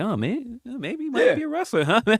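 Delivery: acted-out, smug, needling taunt, very high-pitched. Mocking how they talk while going through your stuff: imitating smug talking. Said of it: "they're talking so smugly".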